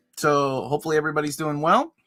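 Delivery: ordinary talk, nothing marked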